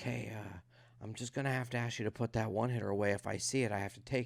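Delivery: hushed half-whisper, under the breath. Retelling how the guy checking him for weed half-whispered a warning; retelling a half-whisper. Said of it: "he whispers".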